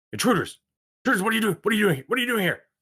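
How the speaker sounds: startled, alarmed yelling, very high-pitched. Voicing guards as the party opens the door: alarmed Red Brand guard. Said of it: "they're like".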